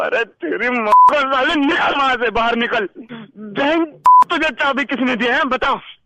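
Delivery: high-pitched, furious yelling.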